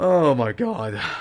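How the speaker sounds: commentator-style voice breaking and cracking on the words. Race commentator reacting to the finish of a race: voice cracking. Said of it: "That was a voice crack".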